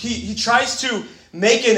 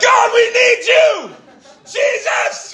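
very slow, very high, drawn-out desperate yell; 13 semitones higher, 5 dB louder than usual. Recalling an 8 a.m. prayer meeting with the staff, retelling own yelling. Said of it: "I'm yelling".

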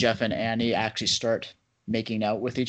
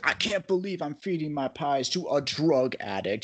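super outraged, slow, every word weighed, acted out; 4 semitones higher, 3 dB quieter than usual. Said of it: "super outraged".

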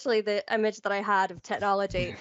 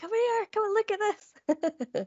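mock, very high, carrying shout; 12 semitones higher than usual. Retelling calling down to their fiance after getting the Microsoft email, retelling a shout. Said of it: "Shouting down to my fiance".

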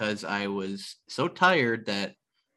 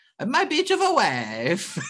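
comic put-on Italian accent, much higher; 11 semitones higher, 4 dB louder than usual. Quoting a man who talks about his wife a lot, in a funny Italian accent. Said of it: "in his funny Italian accent".

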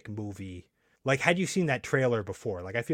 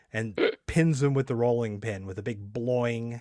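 usual speaking voice

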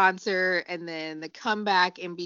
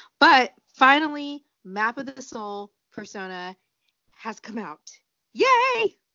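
loud, swooping, slightly put-on excited cheer; 4 semitones higher, 7 dB louder than usual. Speaker announcing the album's release to another speaker, a little excited. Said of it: "let me put a little excitement in my voice".

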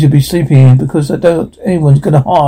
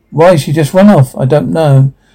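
ordinary delivery

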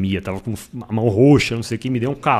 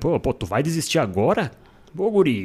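put-on southern Brazilian gaúcho accent; 3 semitones higher than usual. Recounting a race, quoting a fellow runner urging him on, in a gaúcho accent. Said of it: "Aquele sotaque gaúcho".

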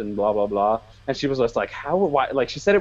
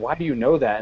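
mock contemptuous, scornful voice. Retelling the way a woman said it, in a mock-contemptuous voice. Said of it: "that contemptuous voice that she said that".

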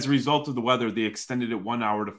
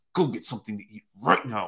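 put-on under-breath mutter through gritted teeth, lower pitch; 3 semitones lower than usual. Retelling a woman's words to a hungry kid, imitating a gritted-teeth mutter. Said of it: "she gritted her teeth and she goes".

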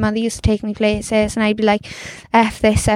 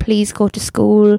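put-on tearful, crying voice. Retelling a mother pulling her child off a roof: imitating mother crying.

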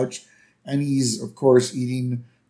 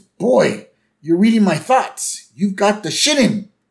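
put-on gasping voice, higher and louder; 8 semitones higher, 5 dB louder than usual. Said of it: "Willie kinda, like, gasps".

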